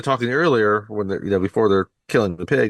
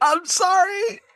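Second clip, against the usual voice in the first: higher-pitched fake sobbing. Retelling a scene where Peter stabs a pig, mock crying. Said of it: "stabbing at this pig and crying".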